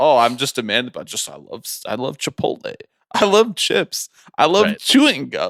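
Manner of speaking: humble, folksy aw-shucks regular-guy act, sing-song. Mocking a man in an ad who lists products he loves: imitating him acting folksy. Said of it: "he's out here being like".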